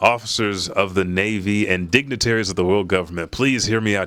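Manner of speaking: ordinary talk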